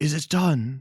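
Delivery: raspy voice, high and loud. Narrator voicing an unseen figure questioning a player, raspy voice. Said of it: "you hear that same kind of raspy voice say".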